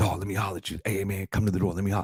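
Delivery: mock jittery, wide-awake, fast, shaky, animated. Retelling what he said at the door: imitating a shaky, hyper voice. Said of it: "And he was very hyper".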